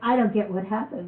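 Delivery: plain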